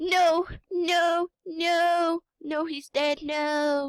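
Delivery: play-acted distraught breakdown, very high and very slow. Retelling Ophelia realizing her dad is dead, as Ophelia impression, mock-distraught. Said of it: "she breaks down. She's sort of like ... that's my impression of her".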